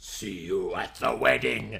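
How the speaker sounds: very low, dark, deep, soft, rasping vampire voice. Reading Alucard's line to Minna-chan as he is taken away on a gurney, Alucard's dark vampire voice. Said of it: "he said in his dark vampire voice".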